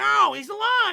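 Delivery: very high, loud, frantic, insistent screaming. Speaker recounts a character in a show screaming at others: imitating Minnie screaming. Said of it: "she's just screaming".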